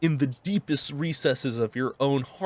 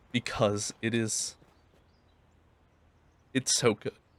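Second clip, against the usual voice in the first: tearing up while talking; 4 semitones lower, 4 dB quieter than usual. Describing a feeling never felt before, tearing up while talking. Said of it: "I feel like I'm tearing up".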